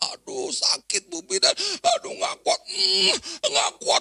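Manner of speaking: very high, crying scream of pain. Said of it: "dia ngejerit-jerit".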